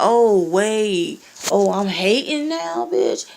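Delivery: very sarcastic, slow, swooping mock tone. Retelling what they said to someone on messenger, retelling own sarcastic tone. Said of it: "I was being like hella sarcastic".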